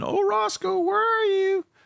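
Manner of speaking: yelling. Retelling how attackers flew over and called out: imitating someone yelling. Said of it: "start yelling".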